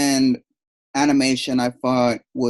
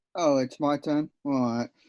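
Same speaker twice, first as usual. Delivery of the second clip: flat and unexcited, quieter; 6 dB quieter than usual. Answering when asked what you made of the film, unenthusiastic. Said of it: "Don't sound too excited".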